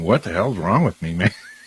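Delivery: tearful, crying speech through tears. Retelling a past moment sitting in a weird location: imitating own crying. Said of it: "crying, going".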